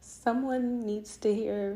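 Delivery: emotional voice, pushing through.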